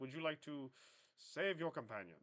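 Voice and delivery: put-on British-accented delivery. Narrating a game, voicing Supreme Chancellor Leda with a British accent. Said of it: "with a surprisingly British accent".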